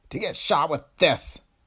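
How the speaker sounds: revolted, full of distaste. Dillon looks at the little gun that killed Laura; disgusted. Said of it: "he sounded disgusted".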